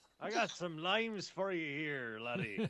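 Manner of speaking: drawn-out, loud, booming, slow pirate voice. Joining in, selling on the high seas: pirate salesman voice. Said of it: "Death of a Salesman on the High Seas?".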